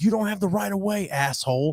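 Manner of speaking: very high, furious, angry yell. Retelling yelling at a driver from a golf cart: retelling own yell. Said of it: "And I yelled at the guy".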